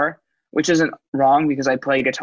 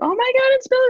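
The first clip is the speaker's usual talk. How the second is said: put-on very high, gushing little-kid baby talk. Retelling a woman's reaction when the blindfold comes off at the mall, imitating her baby voice. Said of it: "in like baby voice".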